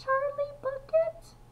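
small, timid, nervous voice, very high pitch. Reading the story aloud, the narrator gives a small, nervous little voice. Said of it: "a small, nervous little voice".

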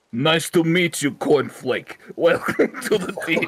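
put-on Russian-accented character voice. Greeting a newly chosen Pokemon by name as asked, in a Russian voice. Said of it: "and with the Russian voice".

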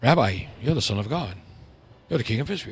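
low, soft, unenthused, offhand delivery. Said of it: "He didn't go".

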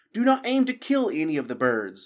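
high, swooping, loud call. During the sparrows' attack, the abbot calls to the archers, crying out. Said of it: "the abbot cried".

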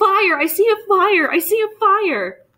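shrill, piercing cry, very high and very slow. Among people huddled in the car, a woman breaks the silence with a piercing cry. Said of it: "a piercing cry broke the silence".

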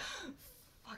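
soft whispered cursing to self.

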